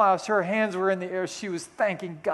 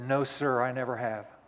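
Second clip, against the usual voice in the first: play-acted firm, strong-voiced delivery; 7 semitones lower, 4 dB quieter than usual. Retelling a man's answer to a preacher's question: imitating a strong voice. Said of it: "in a strong voice".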